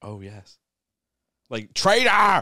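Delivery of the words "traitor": screamed villain voice, high, shrill, at full volume. Asked to do a voice while screaming: screamed Kylo Ren voice. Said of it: "do it in the voice of Kylo Ren. Screaming".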